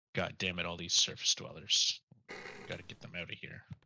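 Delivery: quiet grumbling muttered under breath. Role-play character among market stalls talks to itself, muttering under breath. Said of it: "mutter under my breath to myself".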